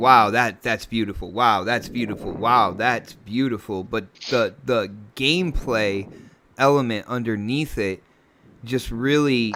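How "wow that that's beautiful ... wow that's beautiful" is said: ordinary talk, nothing marked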